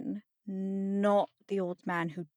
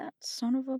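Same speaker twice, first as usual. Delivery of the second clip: muttered under breath, higher; 5 semitones higher than usual. A voice heard just as the door closes behind the group, muttered under breath. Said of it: "Mutters that under her breath".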